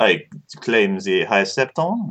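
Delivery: put-on noticeably heavier, extra strong French accent. Redoing a player's line after being asked for more French: Vince impression with more French accent. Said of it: "But with more French".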